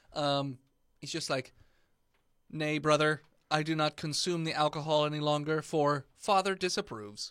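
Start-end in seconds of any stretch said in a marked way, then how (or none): 2.5-7.3 speaking like a machine. Voicing a robot character refusing a beer: robot voice. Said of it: "I guess you had a robot voice".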